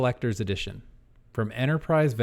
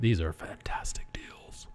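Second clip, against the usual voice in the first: soft ASMR-style whispering. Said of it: "A S M Rs now?".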